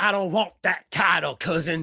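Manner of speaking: put-on wrestler speech rhythm, wrestling promo cadence. Recapping a wrestling promo, doing a Jacob Fatu impression. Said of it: "I do a good Fatu".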